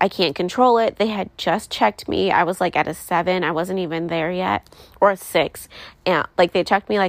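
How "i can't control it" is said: normal talking voice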